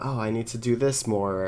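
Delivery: normal talking voice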